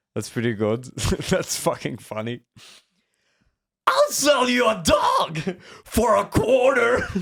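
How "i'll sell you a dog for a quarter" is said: very high, drawn-out, swooping cartoon voice. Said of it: "I have Eddie from Ed, Ed and Eddie".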